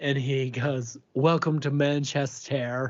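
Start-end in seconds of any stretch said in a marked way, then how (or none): 1.1-2.9 showy, campy, flamboyant announcer voice. Retelling what a flight attendant said on landing: imitating a flamboyant flight attendant.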